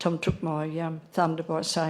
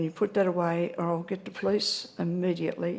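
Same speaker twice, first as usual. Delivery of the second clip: normal talking voice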